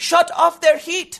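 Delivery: put-on high-pitched, slow, petulant, whiny child voice. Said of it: "If a petulant child comes to me and says".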